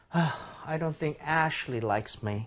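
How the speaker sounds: disappointed. Demonstrating to listeners how to read a practice sentence: disappointed. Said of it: "좀 실망감을 느껴주면서 읽어보겠습니다".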